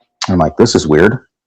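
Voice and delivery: ordinary talk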